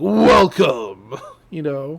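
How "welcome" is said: loud, booming, evil masculine voice. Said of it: "an evil masculine voice is like".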